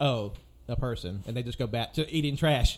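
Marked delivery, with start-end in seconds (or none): 0.0-1.2 mock offhand, can't-be-bothered, dismissive tone. Voicing a human-faced dog that shrugs off a person: completely dismissive. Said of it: "it's completely dismissive".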